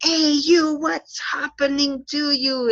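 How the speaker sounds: hostile, confrontational, aggressive yelling. Explaining the difference between shouting and yelling, demonstrating aggressive yelling. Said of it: "talk in a very aggressive way".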